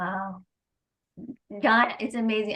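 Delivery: touched and moved, emotion welling up. Responding to john's story while getting emotional. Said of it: "I'm getting emotional here".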